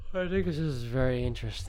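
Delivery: speaking through a yawn. Answering another speaker who doubts the show, yawning while talking.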